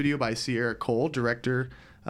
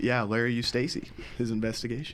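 flat, unexcited, unenthusiastic delivery; 3 dB quieter than usual. Listing the upcoming stories on the show, flat and unexcited. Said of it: "Don't sound too excited".

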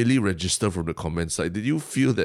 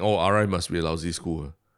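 normal talking voice

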